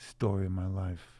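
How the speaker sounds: ordinary delivery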